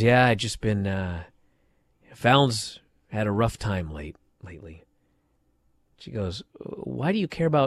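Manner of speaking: put-on mopey, dejected voice, soft and sad. Retelling what a man said while wandering around, imitating him sounding sad. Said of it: "he's all sad and he says".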